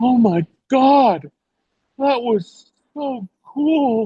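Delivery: stunned wonder, very high and very slow. Retelling a thirteen-year-old's words after meeting a star: imitating a stunned girl. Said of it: "She's just stunned".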